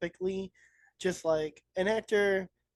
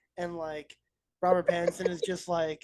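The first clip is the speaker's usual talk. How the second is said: ordinary talk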